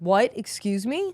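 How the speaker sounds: put-on, worked-up, angry, offended disbelief. Retelling how the attendant reacted: imitating an angry attendant. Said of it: "getting mad".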